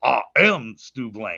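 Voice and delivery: "am" said low and slowly with heavy stress.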